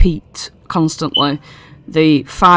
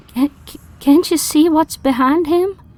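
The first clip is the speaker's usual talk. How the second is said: whispered line, higher; 11 semitones higher than usual. Voicing Clapperclaw as he comes up and whispers: whispering. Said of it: "Clapperclaw comes up to you and whispers".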